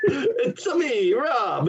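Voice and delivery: very high, swooping weird voice, each word stretched. Echoing the other speaker's Mario-style bit: Mario voice. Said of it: "like Mario".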